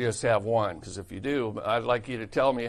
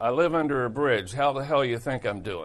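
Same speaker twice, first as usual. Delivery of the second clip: dry, sardonic, sarcastic delivery. Retelling a man's usual answer to his daily greeting, imitating his sarcastic reply. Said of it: "that was funny, sarcastic".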